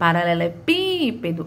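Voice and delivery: stretched, stressed antepenultimate pí in paralelepípedo. Portuguese lesson on tonic syllables, saying paralelepípedo with drawn-out stressed PÍ. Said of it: "o pípedo foi a que mais se arrastou, foi a que teve a maior tonicidade".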